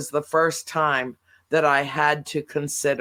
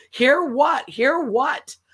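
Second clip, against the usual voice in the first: play-acted, very high yell; 11 semitones higher than usual. Retelling an argument with Dad over the TV, retelling a yell. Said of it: "like yelling at each other".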